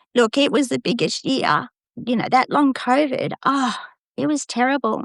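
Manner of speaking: voice full of emotion, pitched high. Speaker recalling a terrible year with long COVID: getting emotional. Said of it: "now I'm getting emotional".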